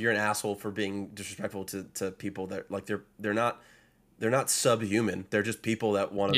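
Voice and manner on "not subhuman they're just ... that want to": normal talking voice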